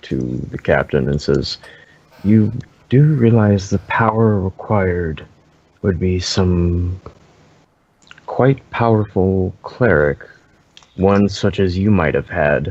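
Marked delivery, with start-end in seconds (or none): 2.2-12.7 whispered voice. Voicing a character leaning to the captain: whispering to the captain. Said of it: "leans forward and whispers to".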